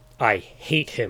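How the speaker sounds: fierce, forceful delivery. Talking with another about someone who is now gone, declared fiercely. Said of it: "declared Chatterer fiercely".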